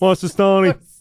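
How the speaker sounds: real north-side Dublin accent. Showing how a north side Dubliner answers the phone: north Dublin accent. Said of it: "real north side of Dublin".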